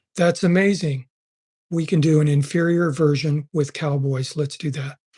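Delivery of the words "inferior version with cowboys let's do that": ordinary talk, nothing marked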